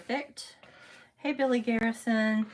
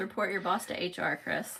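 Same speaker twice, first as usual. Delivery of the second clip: ordinary delivery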